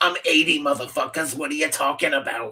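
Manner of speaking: put-on old chain smoker voice. Imagining how the creature Grogu would sound: Grogu as a seventy-year-old smoker. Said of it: "He sounds like a seventy-year-old smoker".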